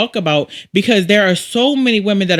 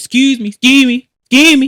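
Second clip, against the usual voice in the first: loud, high-pitched put-on hollered yell; 5 semitones higher, 5 dB louder than usual. Describing a guy at a gas station calling after the speaker, retelling a guy's yell. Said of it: "a guy yells".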